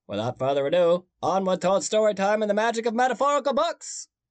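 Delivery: poor Maine accent attempt. Introducing Todd's story time after admitting you can't do the accent well, in a bad Maine accent. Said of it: "I don't think that was a good Maine".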